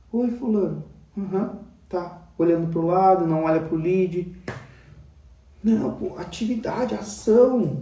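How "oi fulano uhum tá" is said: soft, sad, mopey, listless, deflated voice. Showing someone far from target starting the meeting sad: mock-sad greeting. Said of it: "você começa a reunião triste".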